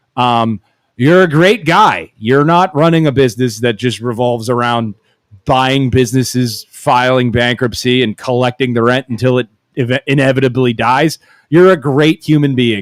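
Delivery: ordinary delivery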